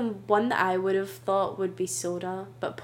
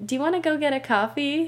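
put-on American accent, raised and pitched high; 7 semitones higher, 5 dB louder than usual. Prompted by a co-host, the speaker tries out an American accent. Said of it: "I'll do my American accent".

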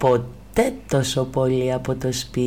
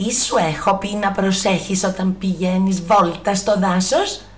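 stern, strict, motherly scolding tone, pitched up; 6 semitones higher than usual. Narrator reads a mother questioning her tearful daughter, stern. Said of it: "ρώτησε τότε αυστηρά η μαμά της".

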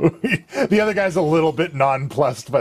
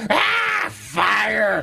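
upset troll howl, high and swooping; 7 semitones higher than usual. Voicing a troll scorched by flames: upset troll roar. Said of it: "Particularly upset".

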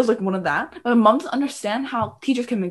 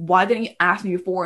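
ordinary talk

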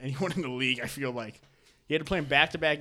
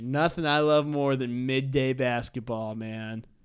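put-on stoner voice, slower. A speaker previewing weekend NBA games, talking like a stoner. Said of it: "I talked like a stoner there".

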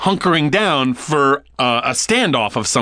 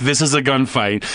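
plain

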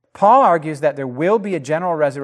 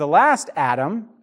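ordinary talk

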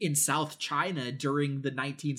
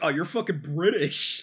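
put-on dumb-sounding American accent; 2 semitones higher, 6 dB louder than usual. Imitating an American guy: dumb American accent. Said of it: "He's got a dumb accent. He's like".

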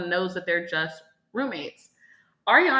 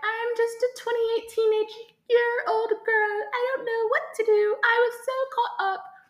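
put-on British accent, very high. Retelling how Rachel sounded when talking, in a British accent. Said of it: "I made her British for a second".

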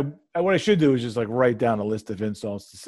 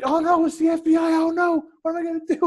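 shrill, very high scream in fake panic; 3 dB louder than usual. Retelling how they messed with a phone caller, acting out screaming in fake panic. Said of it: "And I started screaming".

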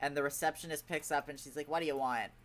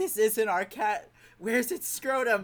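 mock tearful voice, higher and louder; 9 semitones higher, 8 dB louder than usual. Retelling a movie scene, imitating someone crying. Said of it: "And she starts crying".

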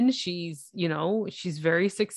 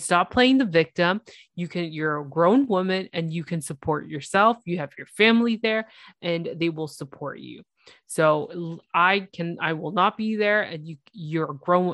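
ordinary delivery

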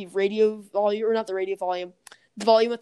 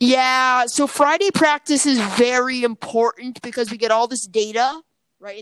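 booming, loud, slow, deliberate put-on voice; 2 semitones higher, 7 dB louder than usual. Doing an impression with the mic very close: loud put-on impression. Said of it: "I hope your ears are still intact after that".

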